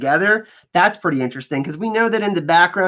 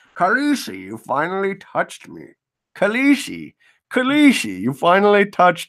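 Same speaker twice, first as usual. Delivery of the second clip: bad put-on voice, swooping and fumbled. Describing a scene from episode one, attempting a bad Jorah voice. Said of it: "I can't do a Jorah voice".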